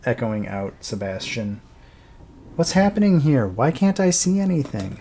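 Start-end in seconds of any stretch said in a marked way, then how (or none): 2.6-5.0 put-on high, raised young girl's voice, calling out. Narrating a tomb scene, a young girl's voice echoes out to Sebastian: young girl voice. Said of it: "you hear the voice of a young girl".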